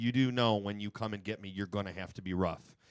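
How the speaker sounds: plain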